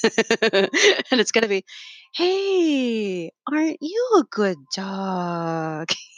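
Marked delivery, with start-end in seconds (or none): 2.1-5.9 very slow, swooping, smooth late-night jazz voice. Visiting a house to calm a troubled dog, in a three am smooth jazz voice. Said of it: "I'm gonna put on my three AM smooth jazz voice".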